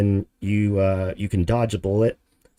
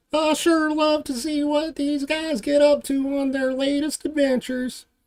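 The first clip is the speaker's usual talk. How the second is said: very high, squeaky falsetto cartoon voice. Speaker trying a Mr. Poopybutthole impersonation, Mr. Poopybutthole voice. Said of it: "mister Poopy Butthole impersonation".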